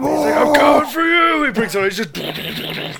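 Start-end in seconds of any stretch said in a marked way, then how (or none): 0.4-1.5 full-volume, very high, shrill shouting. Quoting a scene where Frank Castle brings out a machine gun: shouting like Frank Castle. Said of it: "are you gonna start shouting like that?".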